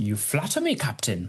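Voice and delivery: put-on German accent, German-accented delivery. Acting a Sound of Music scene, replying to the Captain, German accent. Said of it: "here goes a German accent then".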